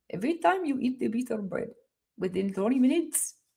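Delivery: soft, hushed, put-on Indian English accent. Practicing a line learned from Sadhguru: Sadhguru impression with Indian accent. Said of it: "practice saying that with an Indian accent 'cause I learned that from Sadhguru".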